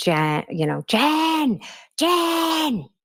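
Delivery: high-pitched mock scream. A witness answering questions in court, imitating Karen screaming. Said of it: "She was just screaming".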